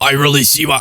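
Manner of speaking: gruff radio host voice, put on. Retrying an impression of Alex Jones: Alex Jones impression. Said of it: "I really struggled to do an Alex impression".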